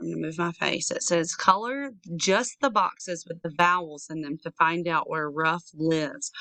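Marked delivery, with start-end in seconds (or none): none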